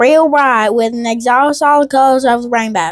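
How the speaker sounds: strong, deep Southern US accent. Rereading a quoted eyewitness description on request: deep Southern accent. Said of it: "reread that quote with a deep Southern accent".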